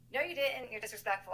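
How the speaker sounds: very high, furious, angry shouting. Retelling a fight with him, acting out your own angry yelling. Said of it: "Like I'm yelling at him".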